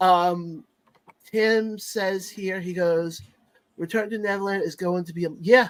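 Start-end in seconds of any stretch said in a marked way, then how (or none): none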